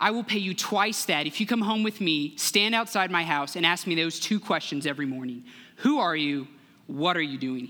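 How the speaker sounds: ordinary delivery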